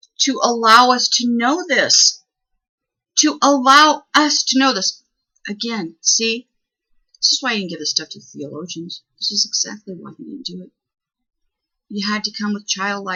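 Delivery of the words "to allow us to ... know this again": choked up, near tears, booming, very slow, drawn out. Speaker, overcome while speaking of him, fights tears: choking up, near tears. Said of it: "I'm not going to cry, but I'm going to cry".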